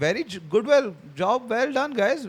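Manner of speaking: mock, backhanded, fully sarcastic praising tone. Retelling the coach's first-half words: imitating sarcastic praise. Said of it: "he was full sarcastic".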